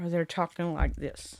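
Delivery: ordinary delivery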